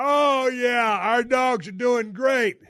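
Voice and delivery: put-on, jarring, over-loud, high chatter. Retelling talking loudly to keep a sleepy driver awake: imitating own loud talking. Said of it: "I start talking real loud".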